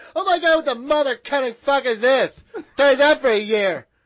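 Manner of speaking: loud, sassy man's voice.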